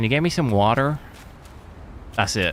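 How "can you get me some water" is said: fake Californian Valley Girl American accent. Showing off the few lines they can do in the accent: put-on american accent. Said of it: "that's all I can say".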